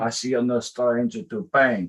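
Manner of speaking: put-on Russian accent. Speaker quotes a line he often tells his wife, in a put-on russian accent. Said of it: "in my Russian accent".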